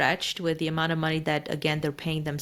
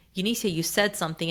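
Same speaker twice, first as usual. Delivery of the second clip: mock stern, put-on serious tone; 2 semitones higher than usual. Retelling what a client's husband said to you on a call: imitating a stern voice. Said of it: "with this very stern voice".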